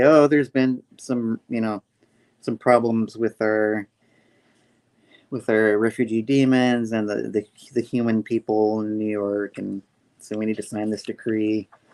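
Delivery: normal talking voice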